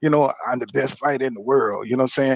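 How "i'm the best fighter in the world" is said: cocky, self-assured, confident boastful delivery. Contrasting the old boastful fighter with now: imitating confident Terrence Crawford. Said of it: "He don't sound like the old Terrence Crawford".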